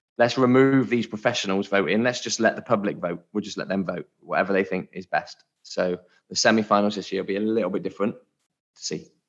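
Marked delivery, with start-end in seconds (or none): none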